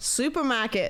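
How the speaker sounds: put-on Australian accent. Asked for an Australian accent, saying their one word: put-on Australian accent. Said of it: "whenever somebody asks me to do an Australian accent. I go supermarket".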